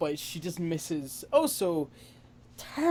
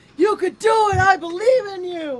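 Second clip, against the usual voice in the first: high, loud, cheering scream. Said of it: "as she screams".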